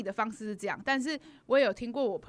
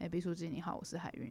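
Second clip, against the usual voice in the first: low, deep, very hushed quiet voice; 5 semitones lower, 10 dB quieter than usual. Recalling how she greeted someone on stage holding her sign, low, deep voice. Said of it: "我都用很低沉声音就说".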